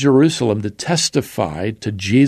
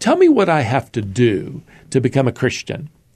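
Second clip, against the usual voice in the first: put-on needling, sarcastic tone with swooping pitch. Retelling a man's question to an evangelist: imitating a sarcastic tone. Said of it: "a man sarcastically said".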